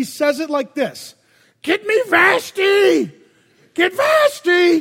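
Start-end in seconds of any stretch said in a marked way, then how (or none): 1.6-4.8 mock very drunk king, high, drawn-out shout. Acting out a really drunk king on his throne calling for his queen, in a drunk Don Knotts voice. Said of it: "think of the guy who's just really drunk".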